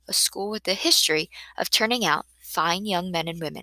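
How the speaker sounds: ordinary delivery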